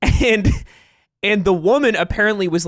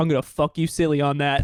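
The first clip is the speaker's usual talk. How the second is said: put-on threatening voice, quieter; 3 semitones lower, 5 dB quieter than usual. Retelling a friend's line at the gym: imitating Ludwig saying it threateningly. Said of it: "I say it threateningly".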